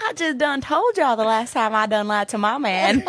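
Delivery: put-on southern US drawl accent. Playing truth or dare, the speaker answers a truth question in a southern accent. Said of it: "Do a southern accent until the game's over".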